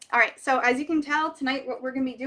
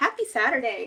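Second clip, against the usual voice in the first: usual speaking voice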